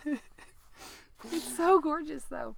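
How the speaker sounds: crying through the words, very slow and high. Talking about a documentary on a podcast, crying. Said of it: "I'm sorry that I'm crying".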